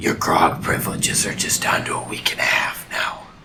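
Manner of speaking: breathy near-whisper, kept low. A player's character speaks as another figure turns back to the ship, in a lowered voice. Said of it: "Tevon in a lowered voice says".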